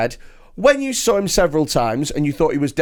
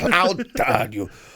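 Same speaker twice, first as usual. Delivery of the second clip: put-on voice of an offended man; 3 semitones lower than usual. Retelling how an offended man reacted: Rod Gilbert impression. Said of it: "That's my Rod Gilbert impression".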